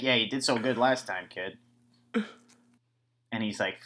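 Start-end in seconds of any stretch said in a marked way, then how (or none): 0.0-1.6 sarcastic, deadpan delivery. Retelling a movie scene, imitating Hackman being sarcastic. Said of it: "I get the sarcasm".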